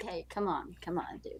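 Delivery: slow, playful, teasing in-character joking voice. Voicing a character who covers their eyes at a flashed sword: jokingly.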